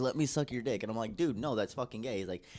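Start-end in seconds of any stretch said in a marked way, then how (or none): 0.0-0.8 mock begging, pleading tone. Recounting a man's persistent advances, imitating someone begging. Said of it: "almost like begging".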